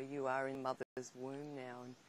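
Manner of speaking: ordinary delivery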